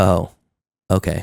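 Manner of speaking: acted deadpan, flat, understated monotone with nothing in it. Describing an actress's line reading, imitating it in a flat monotone delivery. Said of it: "It's like so monotone, so understated".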